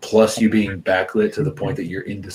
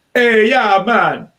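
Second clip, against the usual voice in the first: very high, loud, shrill shout in bad Jamaican accent; 13 semitones higher, 7 dB louder than usual. Retelling a greeting called out from back there: bad Jamaican accent as Mr. Murphy. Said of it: "doing a bad Jamaican accent".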